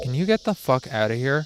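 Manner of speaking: ordinary delivery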